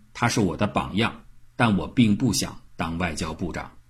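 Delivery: ordinary talk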